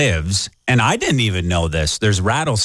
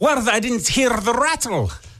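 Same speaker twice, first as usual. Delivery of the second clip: put-on very high, terrible Scottish accent. Telling a rattlesnake bite story, quoting the Scottish guy after the bite: bad Scottish accent. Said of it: "the Scottish guy was like".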